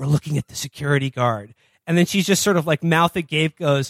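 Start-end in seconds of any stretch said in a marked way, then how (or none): 0.0-1.5 hushed, confiding stage whisper under the breath. Retelling a movie scene where one character speaks to another: imitating a half-whisper. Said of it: "John Hamm whispers to her".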